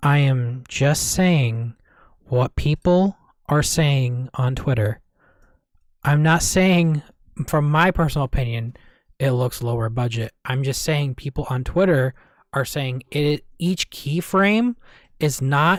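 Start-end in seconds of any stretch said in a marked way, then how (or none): 0.0-13.4 very low, careful, deliberate point-by-point delivery. Explaining what people on twitter are saying, very slowly. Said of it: "I'm going to say this as slowly as possible".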